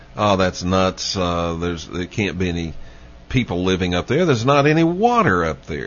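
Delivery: ordinary delivery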